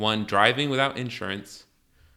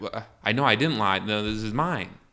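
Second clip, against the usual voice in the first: ordinary talk, nothing marked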